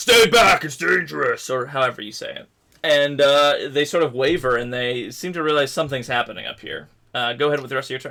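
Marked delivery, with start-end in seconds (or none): 0.0-1.5 loud, authoritarian, commanding paladin shout. Voicing a paladin ordering a mob to stay back: loud authoritarian paladin voice. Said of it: "in your loudest paladin authoritarian voice".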